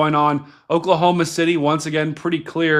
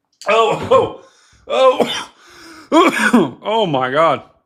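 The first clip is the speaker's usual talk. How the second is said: very slow, pitched-up choking splutter, coughing; 5 semitones higher, 3 dB louder than usual. Reacting after something went down the wrong pipe: coughing, something down wrong pipe. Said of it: "That went down the wrong pipe".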